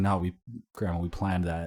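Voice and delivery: ordinary talk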